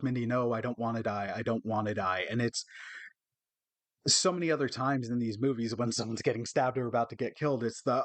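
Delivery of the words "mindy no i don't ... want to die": broken-down, begging plea, not overacted. Retelling a horror movie scene where a girl begs: imitating someone pleading. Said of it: "she's pleading".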